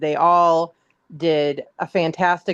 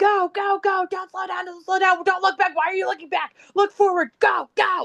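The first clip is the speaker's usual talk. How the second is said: play-acted, very high screaming. Retelling running along the sideline cheering on skaters: imitating her own screaming. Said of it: "I was running up and down the sideline screaming".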